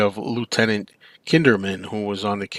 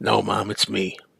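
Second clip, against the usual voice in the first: put-on croaky voice. Retelling a film ending, quoting the daughter's reply: croaky Regan voice. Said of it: "It just sounds croaky".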